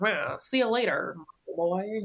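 put-on scornful, sarcastic sneer in old-timey gangster style. Imitating a cartoon character talked about as super sexy: imitating Meg's sneer. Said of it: "that good kind of, like, sneer down".

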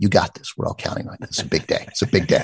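hushed whisper, very close as if at the ear. Retelling someone bending down to the weather anchor's ear: imitating Glenn whispering. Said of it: "bends down and whispers his ears".

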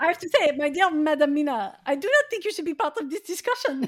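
English spoken with put-on French accent. Addressing Madam Mina in a scene, in a French accent. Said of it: "I have a French accent".

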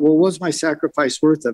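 ordinary talk

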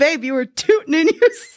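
laughing through words. Quoting what a boyfriend said one morning, retelling it with a laugh. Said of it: "But he said it like with a laugh".

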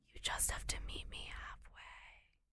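whispered, hushed, soft and drawn out. Retelling a tearful talk between a couple: imitating Peter whispering. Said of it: "Peter starts whispering".

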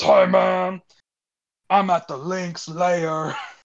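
slow fake drunk drawl. Retelling a friend's phone call, imitating Pope's fake drunk voice. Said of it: "an Academy Award for acting, like, drunk".

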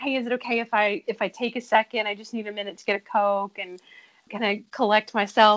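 ordinary talk, nothing marked

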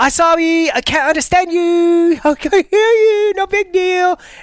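very high, dopey, silly, stupid-sounding put-on voice. Retelling answering a call from someone he didn't know, stupid voice. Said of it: "I did this voice".

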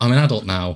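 ordinary delivery

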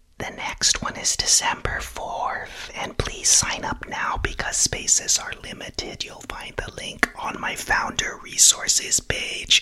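very hushed, conspiratorial whispered aside. Plugging an upcoming webinar date in a whispered aside. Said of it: "whispering like a moron".

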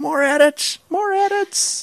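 put-on high-pitched scream. Imagining the podcast's editor at work, imitating Dave Keeshan screaming. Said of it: "just screaming".

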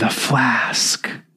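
whisper so faint it almost vanishes. Narrating a story, a woman speaks so the listener can barely hear: faint whisper. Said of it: "Sheila herself whispers faintly, so faintly that Poirot can barely hear it".

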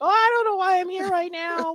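put-on very high baby voice. Discussing Gridiron Heights skits, the speaker imitates how its rookies talk in baby voices. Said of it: "the rookies have like the baby voices".

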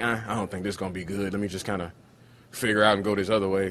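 ordinary delivery

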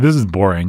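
mock, openly sarcastic, throwaway delivery. Retelling a line cut from an old film script: imitating a sarcastic line. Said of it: "just said sarcastically".

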